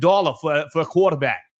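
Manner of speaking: put-on loosely done Northeastern US accent. Retelling what a man said about Michigan, imitating a Northeastern accent. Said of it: "with the new Northeastern accent".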